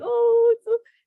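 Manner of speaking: teary, overcome, high and loud tearful cry. Retelling seeing the first Neptune image on screen: retelling own crying. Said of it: "I started crying".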